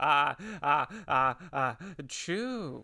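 very slow sneeze, each ah stretched before chew. Answering a request to do an impression: Jeff Goldblum impression. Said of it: "can you give us a Goldblum?".

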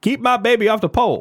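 bad, shrill, very high and loud voice. Quoting a comedian's line about parenting: worst Chris Rock impression. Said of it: "That's the worst Chris Rock impression ever".

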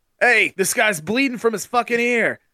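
high hollering. Retelling how the umpire yelled out about the bleeding: imitating an umpire yelling. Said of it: "yell out".

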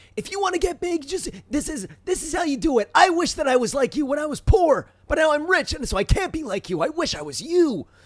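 high-pitched, hyped-up voice. Explaining who a business guru is by imitating him: Gary Vee impression, high-pitched. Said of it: "he's this high-pitched voice guy who's like".

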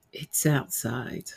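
creepy, eerie whisper. Retelling what the Ghost Tube app said, imitating its creepy voice. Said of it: "it said very creepily".

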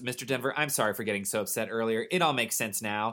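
ordinary delivery

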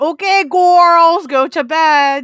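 goofy cartoon villain voice. Explaining where a goofy family catchphrase comes from, doing a Gru voice from Despicable Me. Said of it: "inspired by Gru's voice from Despicable Me".

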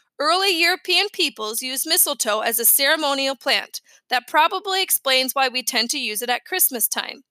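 plain

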